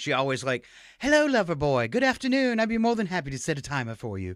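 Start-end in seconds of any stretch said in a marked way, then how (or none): 1.0-4.4 seductive British voice, pitched up. Imitating how the voice assistant greets him when asked to set a timer, sexy British assistant voice. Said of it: "they took away the sexy British voice".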